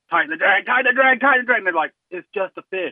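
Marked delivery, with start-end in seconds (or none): 0.1-1.6 high, repeated yell rising louder each time. Retelling what he shouts at the others when they catch a fish, retelling his own yelling. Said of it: "when I start yelling".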